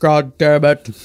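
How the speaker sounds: deep, serious monotone voice. Quoting a movie character's line after praising his very deep voice: Ken Foree impression. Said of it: "Let's not forget his voice".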